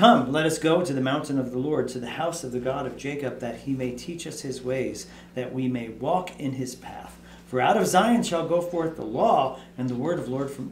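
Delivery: ordinary talk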